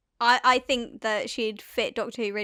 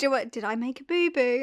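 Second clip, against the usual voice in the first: put-on condescending voice. Retelling a host speaking down, imitating a condescending voice. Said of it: "Are you still being condescending?".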